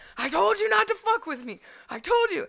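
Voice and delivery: play-acted, shrill, very high-pitched screaming. Retelling a fight's aftermath, imitating own screaming at the other man. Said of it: "And I'm over there screaming".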